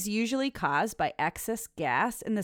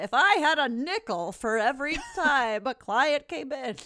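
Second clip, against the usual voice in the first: put-on old grandpa voice, grandfatherly old-timer talk, pitched up; 6 semitones higher than usual. A dietitian talking about clients and bloating, talking like a grandpa. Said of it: "I'm going to talk like my grandpa".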